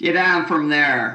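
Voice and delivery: low growl. A bridge security guard pulls up in his van and addresses a woman, growled. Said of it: "he growled at Carolyn".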